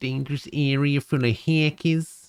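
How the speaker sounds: New Jersey accent. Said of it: "like a Jersey accent".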